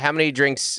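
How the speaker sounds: plain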